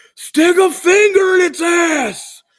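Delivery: shrill, very high, very loud screaming screech. Retelling how another friend ran up to the fight: imitating a friend screaming. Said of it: "started screaming".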